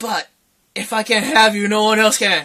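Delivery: ordinary delivery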